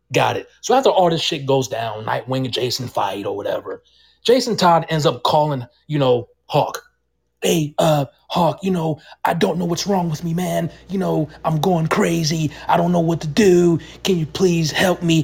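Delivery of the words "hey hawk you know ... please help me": put-on crying voice. Retelling the scene where Jason Todd calls Hawk for help, imitating him crying. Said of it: "He called Hawk crying".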